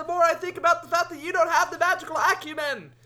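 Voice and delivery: shouting in character. Calling to Amelia while running toward the helm: yelling in character. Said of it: "You're yelling that at her".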